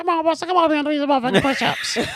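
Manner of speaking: put-on high-pitched granny voice. Recounting push-up workouts in jail, doing Carl's grandma voice. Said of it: "Carl sounded like a grandma".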